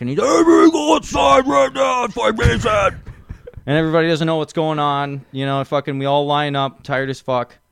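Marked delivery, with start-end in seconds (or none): 0.2-3.0 put-on very high, rough, unhinged drunken ranting. Retelling a drunk drill sergeant ordering everyone outside: imitating a drunk maniac. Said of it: "just acting like, like a goddamn maniac".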